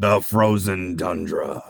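way over-the-top, grand, dramatic sports-film narrator voice. Friends joking on a podcast, doing an NFL Films voice. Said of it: "NFL Films voice. Yeah, like way over".

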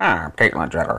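deep, low, odd voice, left unchanged. Doing a quick impression while talking about Caitlyn Jenner: Caitlyn Jenner impression. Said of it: "my impression of Bruce slash Caitlyn is".

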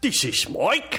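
very high Victorian factory-hand voice. Introducing oneself in a group round of names, in a Victorian coal factory worker voice. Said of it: "Sounded like they work in the same Victorian coal factory".

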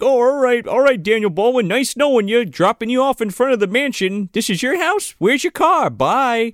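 mocking, put-on cheerful tone.

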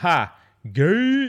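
very loud laughing yell. Retelling a reaction to someone's news, retelling a laughing yell. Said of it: "I laughed and yelled out".

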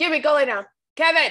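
high-pitched shouting. Recording at home while dogs bark, telling the dog to lie down, yelling. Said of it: "I didn't mean to yell in your ear".

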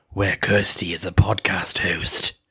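epic, dramatic movie-trailer voiceover narration. Teasing a co-host about how she says her intro, movie-trailer voiceover impression. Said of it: "like that voiceover guy for the movies In a World".

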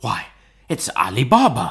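slow, ecstatic, overjoyed exclamation. A narrator reads Scrooge's line, exclaiming in ecstasy.

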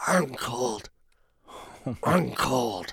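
barely audible, very quiet, strangely altered voice. Speaker retells Trey answering Mona's question, Trey's completely different voice. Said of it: "completely different voice".

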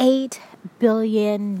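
very slow, deliberate, drawn-out, every word weighed. Repeating the figure just read out, saying it again slowly. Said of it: "Let me say that again slowly".

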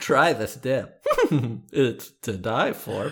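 sly, sing-song scheming royal courtier voice. Acting out offering dip to others, in a king's right-hand man voice. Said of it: "Your king's right-hand man voice".

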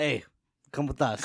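ordinary talk, nothing marked

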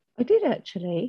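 a bit taken aback. Asked by the host if she wants to add something, the guest replies: surprised. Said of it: "You sounded a bit surprised then".

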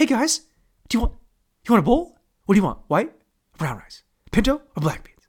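overeager, gushing, way too excited voice. Retelling how the server offered bowl options: imitating an overexcited server. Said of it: "the guy that was giving it to us was way too excited".

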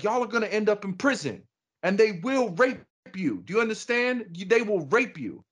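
put-on very high, angry, top-of-lungs shouting. Speaker retells a youth mentor who got mad at the class: imitating him shouting at class. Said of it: "he was shouting at the top of the lungs".

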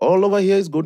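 put-on mimicked Indian accent. Describing picking up an Indian man's accent while talking with him, in an Indian accent. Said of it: "if someone is speaking in an accent, after you speak to them for a while, they start speaking like them".

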